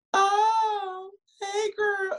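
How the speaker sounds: very high pitch, drawn out, Oh stretched long. Retelling a viral meme of twins walking into a party: imitating twins greeting in a meme. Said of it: "the twins walk in to the little party and they just like".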